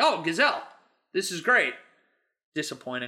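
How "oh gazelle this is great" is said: normal talking voice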